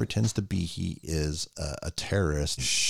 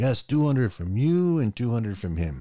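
put-on French-accented English, pitched up; 5 semitones higher than usual. Retelling a film scene, acting out the cab driver: put-on French accent. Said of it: "That's my French accent for you".

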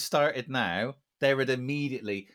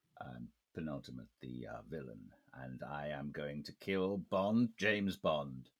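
deep, low, drawn-out delivery; 9 semitones lower, 10 dB quieter than usual. Acting out a villain named Penultimate who plans to kill Bond: Bond villain voice. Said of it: "Penultimate sounds like a Bond villain".

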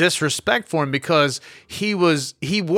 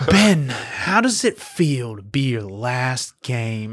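put-on poetic inflection, much lower pitch; 4 semitones lower than usual. Describing a reporter's interview questions, the speaker mimics the mock-poetic interviewer inflection. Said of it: "the way they inflect their voice is like this poetic".

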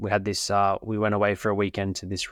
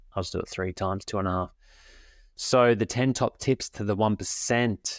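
normal talking voice

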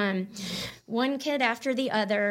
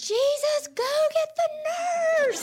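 very high, desperate screaming plea; 3 dB louder than usual. Retelling screaming in the er for someone to get the nurse: acting out a scream. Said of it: "instead I start screaming".

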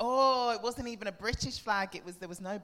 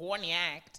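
clumsy, bad put-on Australian accent; 2 semitones lower than usual. Explaining a pun on the name courtney act, bad put-on australian accent. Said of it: "for Australians, it's like [name]".

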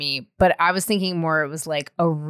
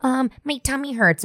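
put-on small child voice, pitched up; 7 semitones higher than usual. Retelling calling mom from a sleepover as a kid: imitating herself as a kid. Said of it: "I was the kid calling my mom at the sleepovers being like".

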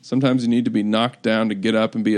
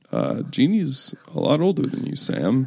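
very deep, distinctive voice, dropped way down; 2 semitones higher than usual. Acting out a trade phone call: Phil Jackson impression. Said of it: "I'm still trying to figure out how he talks".

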